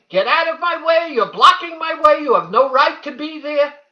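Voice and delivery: very high, loud, shrieking scream. Retelling being rammed again by the woman, imitating her screaming.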